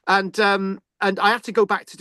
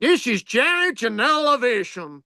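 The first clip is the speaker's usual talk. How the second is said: put-on American accent; 5 semitones higher than usual. Trying to say a quote for a friend, American accent. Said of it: "I gotta get into an American accent".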